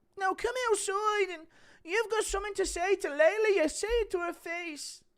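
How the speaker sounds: shrill, very high, loud and slow call-out. Doing impressions, telling someone to come outside at a meet and greet, Ian Garry impression. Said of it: "Impression of Ian Gary telling you to come outside".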